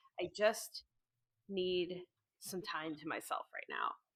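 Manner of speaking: hushed, very quiet, carefully forced calm. Narrating a scene, the speaker voices a character in the calmest voice she can manage. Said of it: "the calmest voice she can manage".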